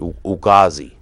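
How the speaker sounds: put-on Boston or New York accent. Saying a word the way they pronounced it, in a boston or new york accent. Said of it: "I just used like a, a Boston or New York".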